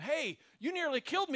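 screamed, accusing outburst, high screaming yell. Retelling a story where a man confronts a driver: imitating someone screaming. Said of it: "He comes screaming at him".

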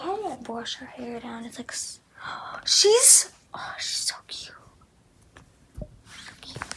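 slow, very quiet, hushed whisper, barely any voice. Speaking while fussing over someone she finds cute: whispering. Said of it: "I don't know why I'm whispering".

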